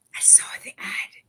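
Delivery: hushed, confiding, secretive whisper. Retelling how people came up about the ad: imitating someone whispering. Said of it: "they'd whisper".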